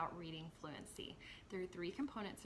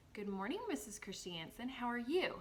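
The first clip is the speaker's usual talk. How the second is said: expressive voice with pitch going up and down. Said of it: "as I modeled what expression sounded like".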